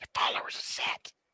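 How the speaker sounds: soft, sneaky whisper. Player sneaking up behind another character and tapping his shoulder, whispering. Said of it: "just like whisper".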